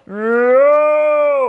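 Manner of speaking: high, loud, anguished yelled no.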